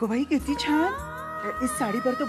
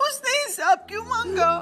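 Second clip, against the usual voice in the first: speaking while crying, through tears; 9 semitones higher, 3 dB louder than usual. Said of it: "आई, तू रो मत।".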